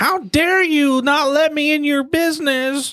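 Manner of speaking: very high-pitched, slow screaming voice. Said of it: "that's actually his Karen voice".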